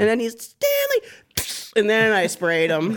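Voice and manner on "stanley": mock scream, higher. Retelling how someone suddenly started screaming at him: imitating someone screaming. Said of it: "he just starts screaming at me".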